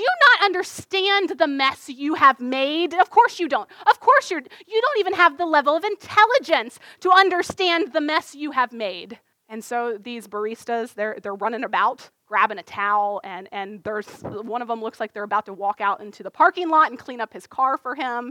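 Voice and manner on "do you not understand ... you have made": acted-out, high-pitched, enraged screaming. Retelling a man berating workers behind a counter, imitating someone screaming. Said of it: "he's screaming at the workers".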